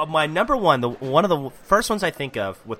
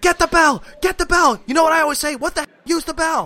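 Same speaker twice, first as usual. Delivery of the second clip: very high put-on voice, eager, egging on; 12 semitones higher, 4 dB louder than usual. Retelling a wrestling match, quoting Bobby Heenan: imitating Bobby Heenan. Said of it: "And he's like".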